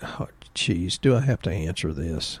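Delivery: deep, sexy morning voice. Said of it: "That's my deep, sexy voice".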